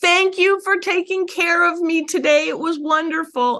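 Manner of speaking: high-pitched, mild mock little child yelling. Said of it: "And he yells back".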